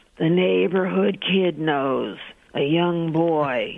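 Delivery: put-on speech on a smoky exhale. Retelling a psychic's answer on the phone: imitating speaking on a smoky exhale. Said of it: "she exhales again and she says".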